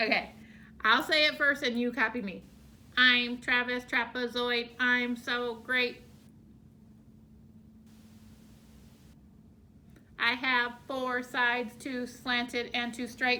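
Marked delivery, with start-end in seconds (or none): 3.0-13.4 flat, monotone, mechanical robot voice. Saying the poem first for the group to copy, in a robot voice. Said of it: "Do you guys want to try to talk like a robot?".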